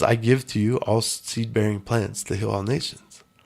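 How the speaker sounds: ordinary delivery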